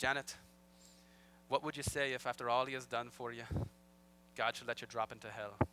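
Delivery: clumsy, bad put-on Irish accent. Quoting a man's question to Janet, in a bad Irish accent. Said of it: "now this is all going to happen in bad Irish accents".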